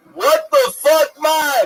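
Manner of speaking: put-on Jamaican accent. In casual group banter, speak in a Jamaican accent. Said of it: "Was that your Jamaican accent?".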